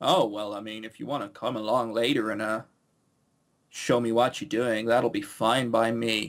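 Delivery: utterly flat, very low deadpan. Mocking a game character's line right after a murder; mock flat deadpan delivery.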